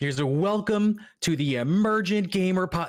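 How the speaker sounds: try-hard, overeager delivery, very slow and high. Teasing another speaker about the show's opening, imitating an overeager intro. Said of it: "You're just trying so hard".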